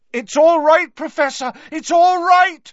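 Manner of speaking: very loud, very high, shrill call. Harry reassures the Professor while scooping up more potion for him, loudly. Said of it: "said Harry loudly".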